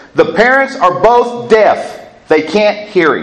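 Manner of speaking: announcing, proclaiming tone. Speaker retells telling a restaurant a toddler's parents are deaf: retelling a very loud announcement. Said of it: "I spoke at a very high volume and said".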